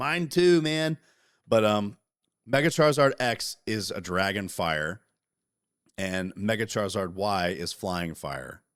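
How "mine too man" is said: high, loud, excited voice. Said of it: "I said".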